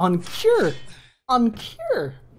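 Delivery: very slow, drawn-out, high voice breaking up. A speaker watching Ballin mess up Zorak calls out, voice cracking. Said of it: "My voice is cracking".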